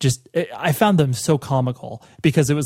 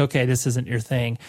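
normal talking voice

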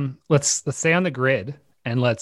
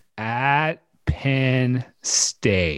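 deliberately very slow, drawn-out reading. Reading out a football schedule, asked by a co-host to go slow: reading really slowly. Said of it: "read this next one really really slow".

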